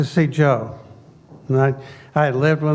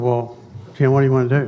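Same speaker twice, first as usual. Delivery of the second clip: plain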